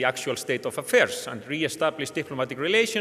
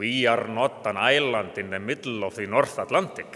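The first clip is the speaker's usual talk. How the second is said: put-on Finnish accent, much lower pitch; 4 semitones lower than usual. Speaker quotes Koivisto's answer to a question, in his strong Finnish accent. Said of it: "answered in his sort of strong Finnish accent".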